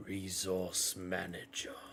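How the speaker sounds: hushed, measured, low, near-silent voice. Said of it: "puts his hand up and he goes".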